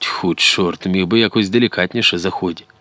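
ordinary delivery

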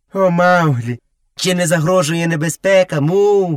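taunting mimicry. The youth mockingly repeats the buffalo Miza's question about danger. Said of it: "Насмішкувато повторив юнак".

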